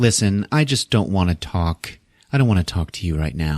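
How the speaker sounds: ordinary delivery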